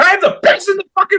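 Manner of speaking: very high, wild, shrieked screaming rant. Act out a man in his character at a press conference facing reporters, imitating a man screaming. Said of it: "just like screaming at the like reporters".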